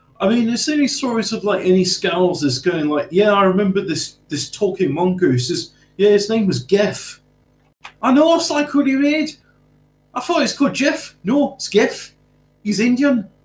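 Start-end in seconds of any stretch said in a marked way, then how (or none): 3.3-13.2 attempted Liverpool Scouse accent. Asked about Scousers' stories, the speaker answers in an attempted Scouse accent. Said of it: "my attempt at scowls".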